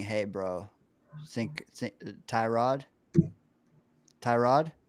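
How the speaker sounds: voiced stage whisper with a nudging tone. Asking what someone would half-whisper over A G's shoulder: imitating a half-whisper. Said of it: "when are you whispering".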